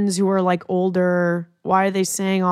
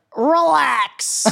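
high-pitched, stretched-out comic voice; 8 semitones higher, 3 dB louder than usual. Doing a Todd Glass impression for another comedian: Todd Glass impression. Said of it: "Do you wanna hear my Todd Glass impression?".

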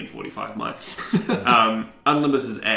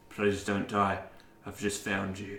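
hushed, close, soft, gentle half-whisper; 7 dB quieter than usual. Forehead to forehead with the player's character, another character speaks, half-whispering. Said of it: "Bamfor just whispers".

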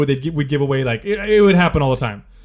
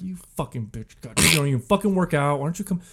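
mock muttered cussing, much quieter; 6 dB quieter than usual. Retelling going through a box of shirts to appease her: re-enacted muttering under breath. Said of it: "kind of under my breath".

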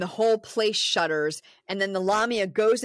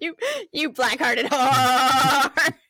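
put-on goat voice, higher and louder; 5 semitones higher, 5 dB louder than usual. Retelling a movie scene where the voice moves into a goat: imitating a talking goat. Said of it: "That's what the goat would sound like if he talked".

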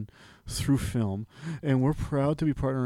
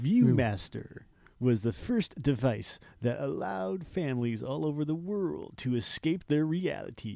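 pompous cartoon captain voice, slower. Speaker practicing an impression while narrating about the ViewMaster, Zapp Brannigan voice. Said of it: "Zap Brannigan".

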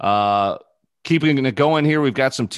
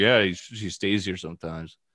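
ordinary talk

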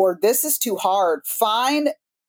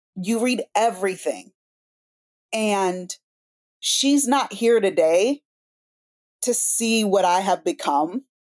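emotional voice welling with feeling, holding back. Speaking of a woman who is not here to see what the speaker became: emotional voice. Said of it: "I can already feel it in my voice".

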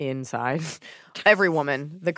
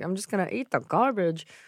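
odd, put-on Rhode Island accent with attitude; 2 semitones higher than usual. Imitating a movie character who only eats junk food: imitating Rosie O'Donnell's character. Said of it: "You can get mad at me for imitating her".

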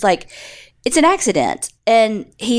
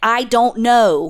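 put-on, very teenage-sounding voice. Retelling a suspect's answer in an interrogation: imitating a teenager-sounding reply. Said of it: "sounding very teenagerly".

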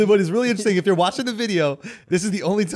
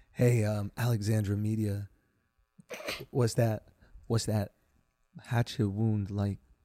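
mock-seductive, put-on sexy voice; 11 semitones lower, 10 dB quieter than usual. Showing how he talks sexy, in a put-on sexy voice. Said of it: "this is how I talk sexy".

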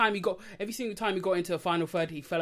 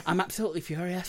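put-on accent that comes out sounding Scottish. Showing the one line known in an accent: Gary Neville accent. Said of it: "how to say Gary Neville's accent is".

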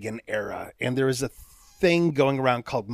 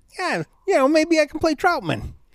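pitched way up, deliberately poor delivery; 4 dB louder than usual. Retelling what Burt Reynolds said to Stallone: bad Burt Reynolds impression. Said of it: "Your Burt Reynolds impression".

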